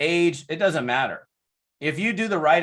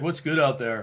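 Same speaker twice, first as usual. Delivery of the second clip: put-on down, glum, low-spirited depressed tone; 2 semitones lower than usual. Retelling a phone call, imitating a depressed caller. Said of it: "he sounded like depressed, like bad".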